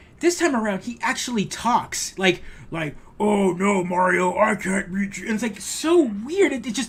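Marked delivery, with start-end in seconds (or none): 3.2-5.3 slow, drawn-out, chilling video game boss voice. Retelling how the villain now talks in the game: Bowser voice. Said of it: "your Bowser voice is giving me chills".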